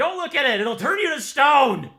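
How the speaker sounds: shrill, very high, loud full-throated scream. A game narrator voices a character's warning mid-scene, screaming. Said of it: "he's screaming".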